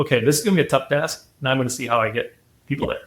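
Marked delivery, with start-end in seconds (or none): none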